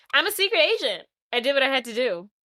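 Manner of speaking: put-on casual, unbothered, nonchalant offhand delivery. Retelling a film scene, quoting Felicity: nonchalant Felicity impression. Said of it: "so nonchalant".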